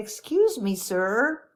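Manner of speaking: put-on small, sweet, polite, childlike little-kid voice. Retelling finally addressing an engrossed man, in a small child's voice. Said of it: "I said it like this. I sounded like a small child".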